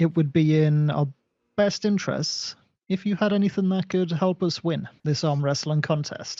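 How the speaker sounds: secretive, hushed stage whisper. Player in a role-playing game speaking to another character, half-whispering. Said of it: "and I'll whisper this".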